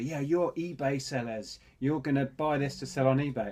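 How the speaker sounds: loud voice. Retelling what a man said to them at the charity sale: imitating someone saying it loudly. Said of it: "he said really loudly".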